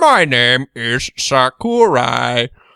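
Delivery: monotone put-on voice. Voicing Sakurai's self-introduction as a Stephen Hawking impression, monotone. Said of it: "just doing your own voice, but sort of more monotone".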